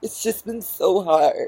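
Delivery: very high, weepy, tearful crying whine. Speaker mocks a woman crying after a puppet show, imitating someone crying. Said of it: "she's sitting there crying".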